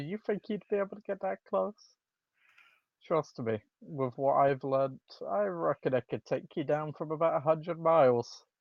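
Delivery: amused chuckle running under the words. Voicing a player character answering a taunt: chuckling while speaking. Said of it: "El's just gonna chuckle and say".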